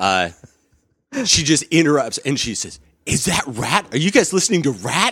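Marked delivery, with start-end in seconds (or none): 3.1-5.1 mock gushing, eager, excited, high outburst. Retelling how a woman at the door interrupted: imitating someone super enthusiastic. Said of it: "Just super enthusiastic".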